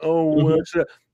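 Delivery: put-on sincere concern. Mocking a character's doubts: mock heartfelt tone. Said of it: "that whole heartfelt".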